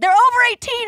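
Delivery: high, heated screaming. Retelling screaming at a woman online: imitating own screaming. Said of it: "I'm screaming at this woman being like".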